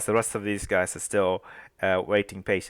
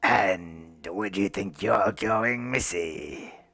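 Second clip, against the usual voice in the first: menacing, horrible whisper. Voicing a creature whispering in a player's ear: horrible whisper. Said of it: "this horrible w-, whisper in your ear".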